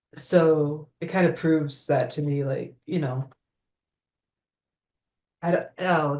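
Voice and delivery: voice catching, choked up with emotion. Speaker sharing something personal, getting emotional. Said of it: "emotional stuff".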